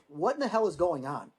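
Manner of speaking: ordinary talk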